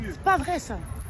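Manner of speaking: loud, high-pitched, furious yelling.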